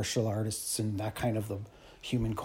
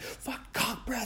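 put-on manic outburst, higher and quieter; 12 semitones higher, 5 dB quieter than usual. Retelling a guy who honked and then cursed: imitating a manic guy. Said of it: "he's going manic".

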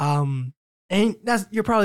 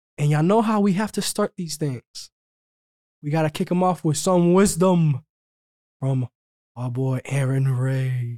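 dark, sinister, menacing evil warlock voice. A co-host kicks off the show by introducing his partner, sounding like an evil warlock. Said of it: "you sound like an evil warlock saying that".

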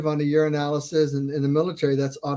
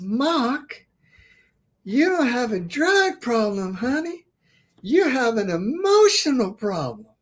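very high put-on Southern accent, a name drawn out; 9 semitones higher than usual. Retelling what a woman once told the speaker, mimicking a Southern accent. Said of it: "I'm going to mimic her a little bit".

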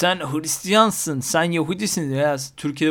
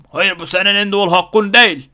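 loud, clumsy, bad fake regional Turkish dialect; 4 semitones higher, 7 dB louder than usual. Acting out someone who disputes the speaker's right to their own view: bad put-on regional dialect. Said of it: "Böyle bir şive yaptım ama".

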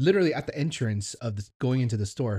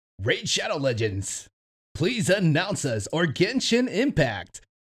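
announcer-style voice, pitched up, proclaiming; 7 semitones higher than usual. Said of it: "announcer voice".

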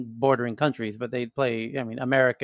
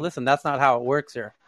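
plain

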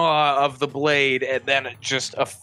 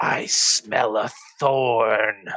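muttering under the breath, lower and slower; 4 semitones lower than usual. Game master voicing a character as her ally gets sliced, muttering under her breath. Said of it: "you can hear her mutter just under her breath".

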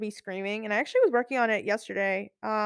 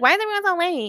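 mocking, annoying, high-pitched put-on voice; 8 semitones higher, 4 dB louder than usual. Retelling what a professor said about late students: mocking imitation of an annoying professor. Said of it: "that's how he sounds in my ear because he's so annoying".

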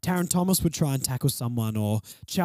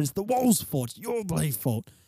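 joking, put-on, fake angry tone; 2 semitones higher than usual. Pointing at the wall while ranting about the team: mock angry blaming.

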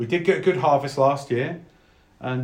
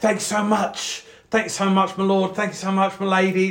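grateful commoner voice, higher pitch and slower; 7 semitones higher than usual. Storyteller voicing commoners who come up to thank the listener's character, grateful commoner voice. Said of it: "Like a few commoners".

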